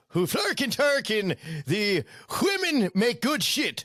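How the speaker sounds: high fake Swedish accent with nonsense words. Riffing on a beer commercial with friends, doing the Swedish Chef: Swedish Chef voice. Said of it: "The Swedish chef says".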